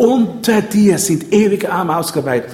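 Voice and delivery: UNTER stressed above the rest.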